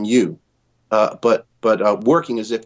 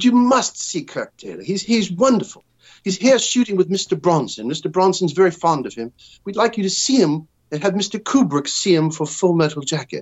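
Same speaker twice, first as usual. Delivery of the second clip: high-pitched, put-on British accent; 8 semitones higher than usual. Retelling a phone call pretending to be an agent: British accent. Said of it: "did a British accent and acted like I was an agent".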